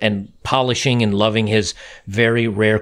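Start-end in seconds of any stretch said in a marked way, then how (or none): none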